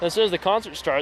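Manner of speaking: normal talking voice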